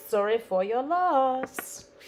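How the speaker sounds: way too happy, very slow and drawn out. Stamping something while someone waits, sounding way too cheery. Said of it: "that sounded way too cheery".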